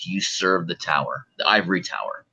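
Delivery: low, quiet, throaty, guttural voice. Player voicing their character, knife at a woman's throat, questioning her: low guttural voice. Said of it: "ask her in a low guttural voice".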